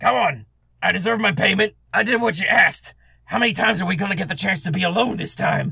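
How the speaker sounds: rough, gruff voice. Someone outside the door calls in to those hiding inside: gruff voice. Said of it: "you hear this gruff voice on the other side of the door".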